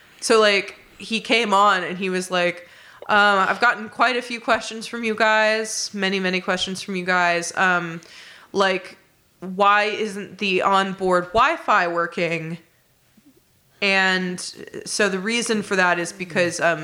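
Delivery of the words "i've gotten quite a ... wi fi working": usual speaking voice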